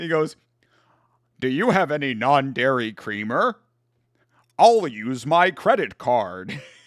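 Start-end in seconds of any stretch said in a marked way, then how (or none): 1.4-6.6 mock American accent, pitched lower. Retelling a favorite South Park joke, doing the announcer's impression of Americans. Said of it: "You want to hear my impression of Americans?".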